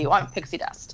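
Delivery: normal talking voice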